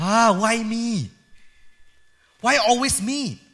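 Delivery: put-on speaking with a Malaysian accent. Act out leaders who know they cannot escape being asked by their pastor, in a put-on Malaysian accent. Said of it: "in a Malaysian accent".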